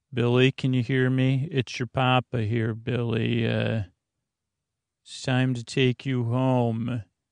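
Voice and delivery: very flat, toneless monotone, home drawn out. Retelling what Dr. Max said to Billy, in Dr. Max's very flat voice. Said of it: "in this very flat voice".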